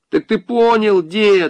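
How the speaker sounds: very high-pitched, shouted calling voice. With her lips to a keyhole, a girl calls to the old man, shouting. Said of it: "крикнула Маша".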